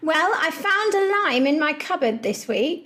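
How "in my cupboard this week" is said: normal talking voice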